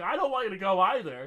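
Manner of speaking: weepy, tearful, crying voice through tears. Retelling watching the Doctor leave, imitating own crying. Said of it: "I'm crying, going".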